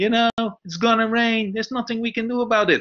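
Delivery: very high-pitched, whiny, complaining tone. Retelling a colleague answering a manager in the audience, in a mock-whining voice. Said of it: "saying in a whining voice".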